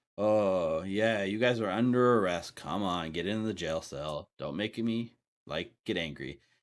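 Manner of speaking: bored, offhand, can't-be-bothered voice. A guard stuck at his post for centuries meets the party, bored voice. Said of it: "he kind of has like a bored voice".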